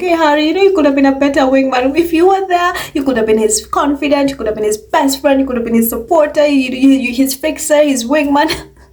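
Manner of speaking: earnest, begging, pleading tone. Imitating the others pleading with harry: imitating pleading. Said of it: "you have them pleading like".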